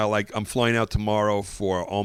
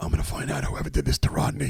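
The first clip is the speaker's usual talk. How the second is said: put-on, very smoky male voice; 6 semitones lower than usual. Imitate the actor taking your killed character's pulse in a scene, in a very smoky voice. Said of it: "he talks with a very smoky voice like this".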